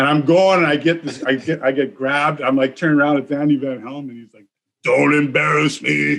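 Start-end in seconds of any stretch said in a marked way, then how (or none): 4.8-6.2 big, gravelly, rough rasping voice. Retelling being grabbed during a game, quoting Andy Van Helm's big deep voice. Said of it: "Like in this big, deep, six five voice".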